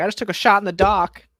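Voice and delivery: loud, high, bellowing cartoon character voice. Imagining a cartoon character on Wheel of Fortune: Peter Griffin voice. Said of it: "Can you do your Peter Griffin again?".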